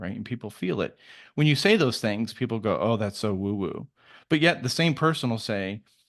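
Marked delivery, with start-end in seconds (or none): none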